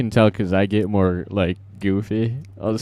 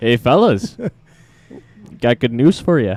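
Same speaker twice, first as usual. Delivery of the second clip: loud, sing-song put-on Wisconsin accent; 3 semitones higher, 5 dB louder than usual. Acting out what people there said to him, in a Wisconsin accent. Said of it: "That's very like".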